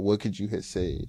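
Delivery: ordinary delivery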